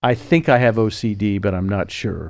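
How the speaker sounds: ordinary delivery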